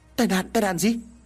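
horrified. Quý jumps up at his friend Tài's words, horrified. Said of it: "Quý kinh hoàng đứng bật dậy".

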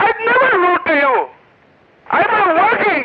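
high-pitched, heated shouting. In a phone argument, accused by the other person of yelling: yelling. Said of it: "Stop yelling".

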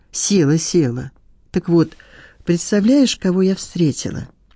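ordinary delivery

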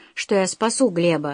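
plain reading voice

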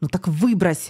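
irritated, annoyed, exasperated tone. The commissar answers the junior officer holding a blood-soaked booklet, irritated. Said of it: "Комісар роздратовано чмокнув губами".

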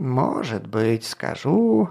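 creaky, scratchy, rasping voice. A gardener answers Gark's question about how to find Klut, in a creaky voice. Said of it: "произнес он своим скрипучим голосом".

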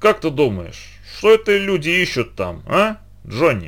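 words slurring together, thick-tongued. A tramp lying by the fire asks another man, who has passed out: slurring his words. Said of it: "Заплетающимся языком выговорил бродяга".

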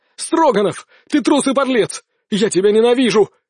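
angry, accusing outburst. Former friend to Stroganov in the corridor, with students watching, yelling. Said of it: "бывший приятель заорал".

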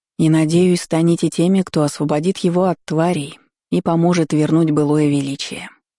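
usual speaking voice

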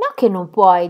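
short, curt, brusque delivery. Gertrude answering the speaker who wants to go unaccompanied, curtly. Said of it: "dichiarò Gertrude seccamente".

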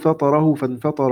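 ordinary delivery

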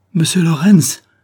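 high, loud cry full of terror. Hearing the young lady's answer about the door, she exclaims in terror. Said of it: "s'écria-t-elle d'une voix remplie de terreur".

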